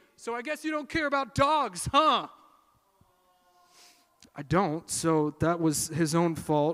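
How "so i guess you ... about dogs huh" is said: taunting yell, high pitched. Retelling what a man on the corner yelled across the crosswalk: imitating a man yelling. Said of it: "this man yells out to me".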